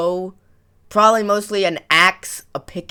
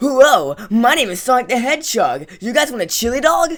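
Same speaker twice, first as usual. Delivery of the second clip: high-pitched troll voice with big pitch swoops; 5 semitones higher than usual. Showing how to voice troll in a game: Sonic voice. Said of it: "voice troll as Sonic".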